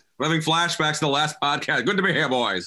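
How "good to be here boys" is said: mid-Atlantic, transatlantic accent. A podcast guest greets the hosts in a transatlantic accent. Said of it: "Transatlantic. It's the best accent".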